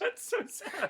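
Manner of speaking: speaking while giggling and laughing. Listener reacts to hearing a mum throws potatoes at a dad, laughing while talking. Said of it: "I'm sorry, I'm laughing".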